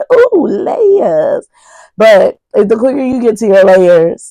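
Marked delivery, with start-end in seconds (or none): 0.1-1.5 very high, put-on cartoon donkey voice. A quick aside in the speaker's own donkey voice. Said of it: "in my donkey voice".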